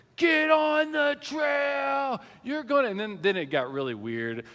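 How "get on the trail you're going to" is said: shrill, very high, slow, drawn-out furious scream, acted out. Retelling a hiker screaming at the children on the trail: imitating a stranger screaming. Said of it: "just screaming them".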